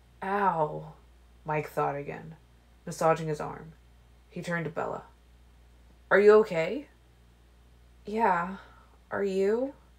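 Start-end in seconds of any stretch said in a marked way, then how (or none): 8.1-9.7 bashful, embarrassed, sheepish little voice. Asked if she is okay, she returns the question to him, sheepish. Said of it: "She asked sheepishly".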